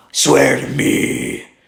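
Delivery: very loud, creaky, rough, fear-inducing menacing voice. Describing the voice he uses in the bat suit: Batman voice. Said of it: "Like that".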